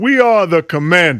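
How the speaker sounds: slow, deliberate, measured delivery. Doing an impression for the others to judge: Craig Melvin impression. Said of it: "your pitch whistle on Craig Melvin".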